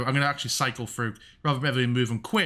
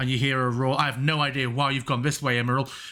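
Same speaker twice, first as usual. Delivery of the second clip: ordinary talk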